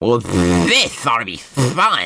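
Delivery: bad sputtering, spitty cartoon duck voice with swooping pitch. Voicing a character in the story, attempting a Donald Duck impression. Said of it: "I can't do a good like Donald Duck impression".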